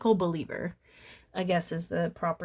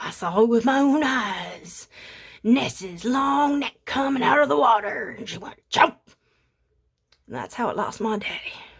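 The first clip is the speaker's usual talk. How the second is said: put-on Scottish accent, pitched up; 5 semitones higher, 4 dB louder than usual. Mocking people who swear they saw the monster, the speaker voices one: Scottish accent. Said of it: "but with like a Scottish accent".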